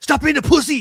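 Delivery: shrill, blaring, very high, loud movie-style shout. Retelling a movie scene where one character scolds another: imitating a loud movie line. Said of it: "he says it loud".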